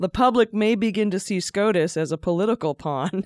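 words spoken through stifled, suppressed laughter. Reading a report aloud and repeating a line, holding back laughter. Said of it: "I can't say this without laughing".

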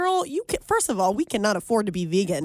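normal talking voice

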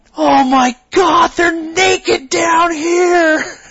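very high, very slow, drawn-out scream. Retelling how a kid shouted up a canyon: imitating a kid screaming. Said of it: "screams up the canyon for everybody to hear".

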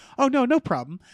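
very gentle, easygoing voice. Retelling how a man answered another guy's challenge, imitating a gentle reply. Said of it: "in a very gentle way".

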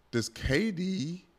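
voice cracking. A speaker starts asking someone a question, voice cracking mid-question. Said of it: "my voice cracked".

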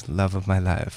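put-on grave, reverent tone, very low and hushed. Retelling how a character in a film answered a question, mimicking a solemn answer. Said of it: "very solemnly goes".

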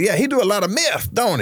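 very high-pitched, probing, fishing tone. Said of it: "He talked like this".

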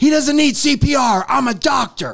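play-acted angry snap, voice pitched way up. Retelling how a man tending to a guy snapped back at a shouting bystander: mock-angry snap. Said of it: "snaps back at Soto".

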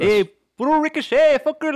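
very high put-on East Los Angeles accent. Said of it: "that's, like, all my accents for, like... East Los".

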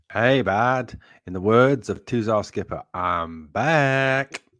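loud, bad put-on American accent. Guest greeting the host as he comes on, in a bad American accent. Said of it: "Sorry for the bad American accent".

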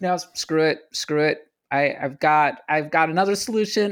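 normal talking voice

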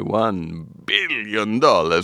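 over-the-top grand, milked, exaggerated delivery. Naming a billion-dollar figure after being asked to say it that way: pinky in mouth, over-the-top delivery. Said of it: "I will put my pinky in my mouth and say".

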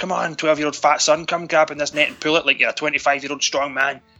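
mock shouting. Retelling a movie scene where a man pulls a net: imitating a shout. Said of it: "he shouts".

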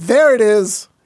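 shrill, very high, loud hollered call, stress on there. Recreating a shout heard on a Periscope stream: retelling a shout. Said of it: "he was the guy shouting".

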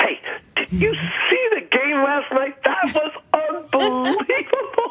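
put-on animated voice, very high, swooping, full of life. Imitating a presenter chatting about last night's game: imitating an animated, colorful voice. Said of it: "with a completely animated voice full of color".

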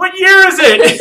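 slow, high, loud yelling.

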